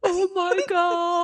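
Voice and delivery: put-on very high, frantic freaking-out cry. Retelling how another listener reacted to a reveal: imitating someone freaking out. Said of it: "freaking out".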